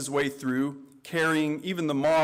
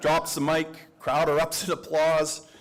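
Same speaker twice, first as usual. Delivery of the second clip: usual speaking voice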